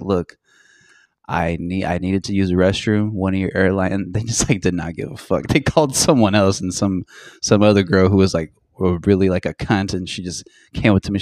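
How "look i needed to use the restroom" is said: very calm, unruffled, even delivery. Retelling what they said to airline staff, retelling speaking very calmly. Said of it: "in very calm voice".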